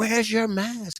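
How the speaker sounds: very high screaming. Recounting a woman in line at Sam's Club screaming at him: imitating a woman screaming. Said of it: "she's screaming at me".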